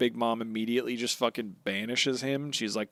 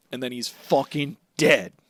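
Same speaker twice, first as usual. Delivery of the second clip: usual speaking voice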